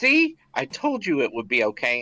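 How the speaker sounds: whispering. A player turns toward Ledric and speaks in character: whispering. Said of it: "And I whisper this".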